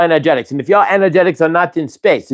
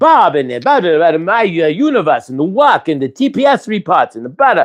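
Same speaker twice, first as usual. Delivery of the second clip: ordinary talk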